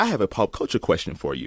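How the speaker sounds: ordinary delivery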